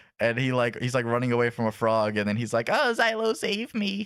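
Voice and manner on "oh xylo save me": very high, very slow, dragged-out wimpy whine. Retelling an anime scene, imitating the loser character's voice. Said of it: "That's how he sounds".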